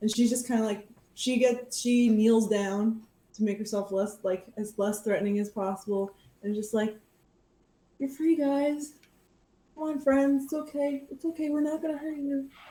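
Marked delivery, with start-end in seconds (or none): 8.0-12.5 soothing, gentle, coaxing voice, high-pitched. Retelling how she kneels and coaxes the freed creatures, in a soothing voice. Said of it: "just keeps talking in a soothing voice to them".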